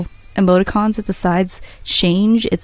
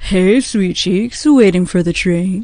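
put-on douchebag character voice. Streamer voicing a male game character greeting a woman, douchebag voice. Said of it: "this guy has to have a douchebag voice".

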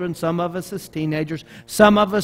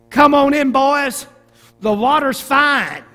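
put-on loud, called-out, pitched-up Mississippi accent; 8 semitones higher, 6 dB louder than usual. Retelling a line a character says in a movie, Delmar's Mississippi accent. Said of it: "That's my best Mississippi accent".

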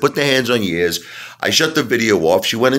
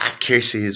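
put-on Southern accent in Tennessee style; 5 dB quieter than usual. Mocking how another video maker says curses: imitating Commander Vlogs' Southern accent. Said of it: "He's like".

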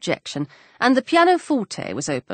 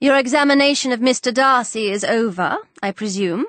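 ordinary delivery

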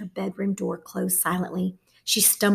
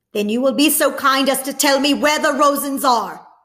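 loud, carrying, raised voice never brought down; 6 semitones higher, 6 dB louder than usual. A soldier questions Mama at night despite her plea to speak softly: not lowering his voice. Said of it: "He made no effort to lower his voice".

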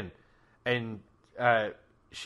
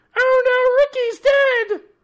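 squeaky shriek, very high and very loud; 13 dB louder than usual. Telling a story, acting out Rowan's scream in her voice. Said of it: "let me do Rowan's voice".

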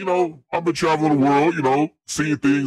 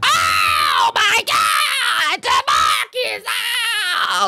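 mock wailing, higher pitch. Imitating the lady crying at a funeral: imitating a wailing auntie.

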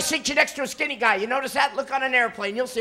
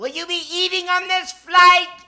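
loud, high-pitched, pointed tone; 6 semitones higher, 6 dB louder than usual. Telling about flying, imitating the attendant with the cart: asking real loud. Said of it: "they'll ask you real loud".

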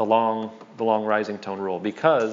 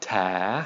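long tone on ta, dipping down then rising; 2 semitones lower, 4 dB quieter than usual. In a tone lesson on long vowels, dipping-rising tone on ta. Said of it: "long rising tone".

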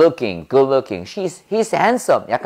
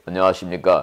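voice dropped very low and deep; 8 semitones lower than usual. Showing how men greet people with a lowered voice, low deep voice. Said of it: "목소리 깔고 얘기해야지".

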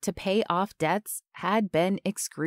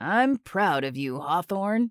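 deep voice thick with emotion. A father, hand on his son hawthorne's shoulder, praises him; deep voice thick with emotion. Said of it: "his deep voice thick with emotion".

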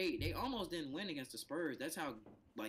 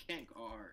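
put-on mutter, lower and quieter; 4 semitones lower, 5 dB quieter than usual. Retelling what a player said in a meme: imitating someone muttering under his breath. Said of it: "He literally said that, like, under his breath".

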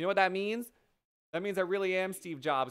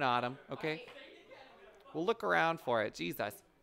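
ordinary delivery

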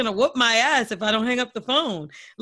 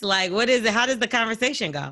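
ordinary talk

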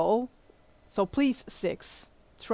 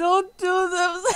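laughing uncontrollably while talking, higher pitch; 9 semitones higher than usual. Reacting to another speaker making a kiss noise: laughing while talking. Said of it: "I can't stop".

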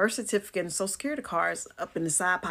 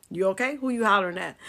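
ordinary talk, nothing marked

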